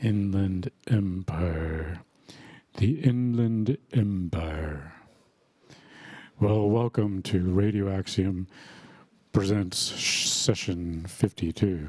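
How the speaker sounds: radio announcer voice, on-air host delivery. The host opens Radio Axiom session fifty-two in a radio voice. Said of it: "I'm revisiting my radio voice here".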